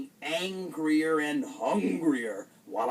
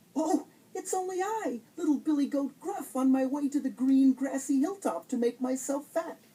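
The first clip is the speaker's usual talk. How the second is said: tiny, very high-pitched little voice; 10 semitones higher than usual. Reading a story aloud, the narrator voices Billy Goat Gruff answering the troll, in a tiny voice. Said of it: "in his very tiny voice".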